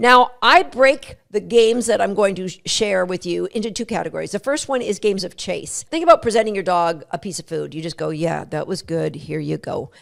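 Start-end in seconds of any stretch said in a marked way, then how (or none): 8.1-9.9 flat, creaky, drawn-out donkey-like monotone. Showing an unexcited way to present a piece of food: Eeyore voice. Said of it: "Gives you kind of like the Winnie the Pooh, Eeyore kind of vibe".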